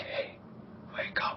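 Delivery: soft, hushed whisper, almost no voice. Waking a sleeping character gently in the game: whisper. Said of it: "I'll whisper".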